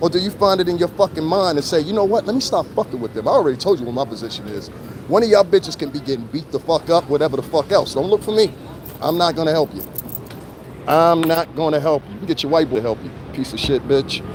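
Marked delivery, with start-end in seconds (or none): none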